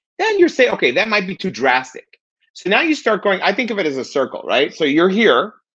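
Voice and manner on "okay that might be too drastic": ordinary talk, nothing marked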